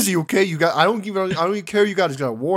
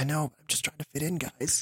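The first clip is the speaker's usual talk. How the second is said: quieter whisper in American accent; 3 semitones lower, 11 dB quieter than usual. Called out as not italian, whispering back to them in a complete american accent. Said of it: "like whisper over to them like in like a complete American accent".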